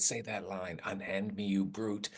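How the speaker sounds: put-on whisper. Retelling prompting a co-star to say a line: retelling a whisper. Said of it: "So I just whispered".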